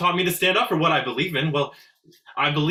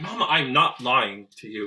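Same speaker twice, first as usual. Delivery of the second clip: sharp, low, snappish, cutting tone; 5 semitones lower than usual. Speaking to mama, who accuses them of lying, in a sharp tone. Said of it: "Don't take that tone with me".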